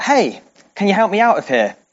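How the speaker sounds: put-on light, mild called-out voice. Telling a joke, a man in a hole calls to a passing doctor: retelling a shout. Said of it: "the guy shouts out".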